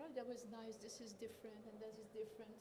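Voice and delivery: plain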